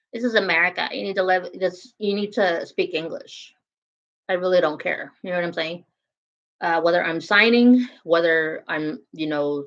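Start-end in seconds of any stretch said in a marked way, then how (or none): none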